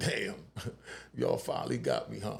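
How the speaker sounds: amused, wry delivery while laughing. Retelling what he said to police while handcuffed: retelling a laughing remark. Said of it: "'cause I'm laughing".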